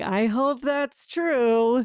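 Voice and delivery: dry, mocking, slow sarcasm with "true" drawn out. Recapping a scene, the speaker acts out one man's reply to another, retelling a sarcastic remark. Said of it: "who starts to laugh sarcastically".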